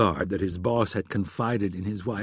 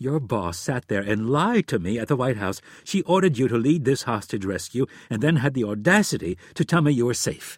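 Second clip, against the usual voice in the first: ordinary delivery, nothing marked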